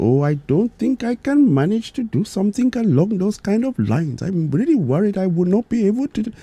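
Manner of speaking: put-on Indian accent, pitched very high. Telling a story, the speaker voices a man's reply in a put-on Indian accent. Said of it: "I'll try my best to do the Indian accent".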